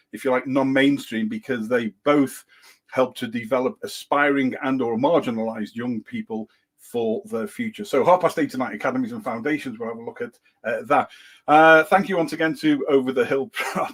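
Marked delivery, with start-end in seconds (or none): 11.4-13.9 giggling, barely getting the words out. Thanking a guest at the end, laughing while talking. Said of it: "I can't even say that without laughing".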